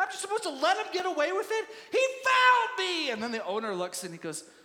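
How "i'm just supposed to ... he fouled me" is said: high, shrill, indignant, furious raised voice. Retelling a player arguing with his trainer after a foul, imitating an angry protest. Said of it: "what are you so mad at?".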